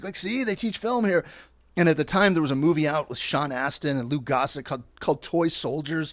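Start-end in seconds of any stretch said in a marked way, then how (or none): 0.2-1.2 acted out, very eager, enthusiastic, pitched-up voice. Retelling a college visit, quoting the dad: imitating dad being very enthusiastic. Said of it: "trying to be very enthusiastic".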